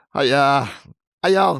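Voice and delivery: loud, shouted fake Boston accent. Reading a listener's letter aloud after being urged: loud put-on boston accent. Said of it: "they don't all shout in Boston".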